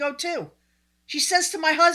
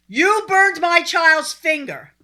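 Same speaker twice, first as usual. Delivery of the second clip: put-on scream, higher and louder; 4 semitones higher, 5 dB louder than usual. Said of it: "stop screaming at me".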